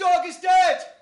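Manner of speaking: very loud, high-pitched call-out. Opening a poem with a call-and-response line to the audience: shouting. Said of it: "I'm also gonna shout something at the start".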